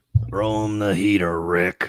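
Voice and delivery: low voice with very slow delivery. Doing an impression of the Major League movie manager for the others: impression of the Major League manager. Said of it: "I'll give you my best impression of him".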